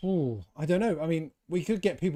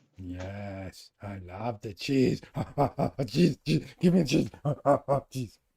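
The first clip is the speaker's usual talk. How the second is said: put-on puppet monster voice; 4 semitones lower than usual. Answering a question about favourite cheese: Cookie Monster voice. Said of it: "I went all Cookie Monster".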